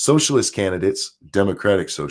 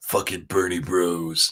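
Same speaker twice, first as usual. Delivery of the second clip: soft, put-on contemptuous, dismissive, disdainful mutter; 3 semitones lower, 5 dB quieter than usual. Answering someone's written message, the speaker mocks their phrasing, mocking a disdainful tone. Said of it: "there's disdain in the way you said Bernie Bros".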